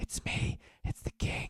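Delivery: soft, hushed, confiding whisper. The king, in a bad disguise, leans in and reveals himself to the group, whispered. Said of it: "he whispers to you".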